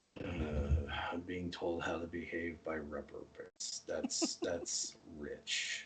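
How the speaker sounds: muttered under the breath, very quiet, low, slow. Voicing a character who mutters a remark: muttered under his breath. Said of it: "he'll say this under his breath".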